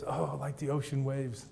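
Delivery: mimicked muttering under breath. Describing a man in a movie looking out the window, imitating his muttering. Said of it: "so he kind of mutters it".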